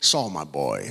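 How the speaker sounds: put-on very low, coolest old-timer voice. Speaker recalls an old animator looking through his portfolio, imitating his cool voice. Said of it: "He had the coolest voice".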